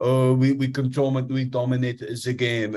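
slow, drawn-out sore-loser sulk. Mocking a losing football manager after the game: Mikel Arteta impression. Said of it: "It's a great Arteta impression".

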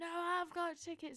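very high-pitched, stretched, drawn-out shout. Retelling shouting back to a man about concert tickets: retelling a shout. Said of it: "shouted to him".

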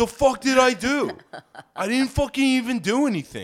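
shrill, very high, belligerent shouting. Retelling how the man kept yelling and asking what he did wrong. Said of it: "continued to yell and ask what he did wrong".

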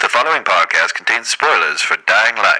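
very loud, electronically altered voice-changer voice. Podcast host trying out a voice changer in an episode, voice changer effect. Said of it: "I'm going to try this voice changer in here".

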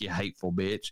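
acted-out muttering under the breath. Retelling what a man in a story muttered to a woman, under his breath. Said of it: "he mentions under his breath".

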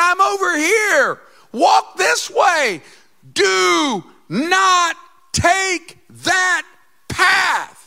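shrill, booming, very loud, high, slow drawn-out scream. Acting out the shepherd calling the sheep to the right path: screaming. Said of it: "He's like screaming".

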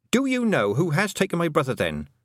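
pressing, insistent, demanding tone. Tiffany questions the Toad about her stolen brother, demanding. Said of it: "Tiffany demanded".

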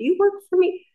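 yelling, pitched very high. Recalling hiding alcohol from a woman who poured it away, the speaker retells yelling. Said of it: "i'm like yelling at her like".

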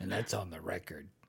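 low, soft, completely serious voice. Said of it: "He's all serious about it".

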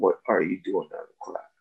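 quick, hushed whisper under the breath. Retelling leaning over to a student out of class: retelling a whisper.

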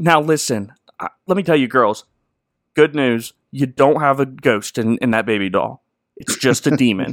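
offhand, breezy, nonchalant casual tone. Retelling how Ed breaks the news about the doll: imitating Ed's nonchalant tone. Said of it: "he says it in a very nonchalant way".

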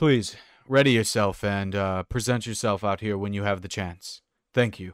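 calling out loudly. A voice goes room by room rousing everyone: shouting through a door. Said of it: "a voice kind of shouts through the door saying".

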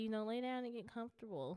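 ordinary talk, nothing marked

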